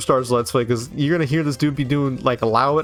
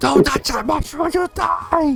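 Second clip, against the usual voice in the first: put-on squeaky cartoon-style scream; 13 semitones higher than usual. Quoting the movie's Toad at the start: screaming Toad voice. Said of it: "when he screams at the start".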